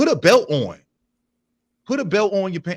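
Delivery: loud fatherly scolding. Telling men who sag their jeans to wear belts: scolding like a father. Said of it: "You sound like a father right now".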